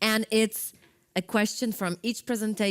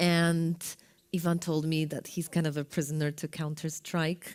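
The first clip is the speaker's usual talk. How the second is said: low, hushed, confiding lowered voice; 6 semitones lower, 6 dB quieter than usual. A host introducing the next speaker mentions his game habit, in a lowered voice. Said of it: "I'm lowering my voice".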